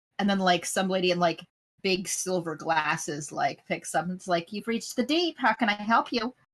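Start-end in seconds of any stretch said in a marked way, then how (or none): 4.5-6.3 put-on nineteen-twenties old-movie mid-Atlantic accent. Voicing a switchboard lady answering a call: old-movie mid-atlantic accent. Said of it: "that mid-Atlantic accent that everyone had back in the old movie time".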